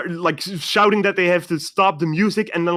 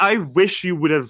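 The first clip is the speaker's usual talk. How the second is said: usual speaking voice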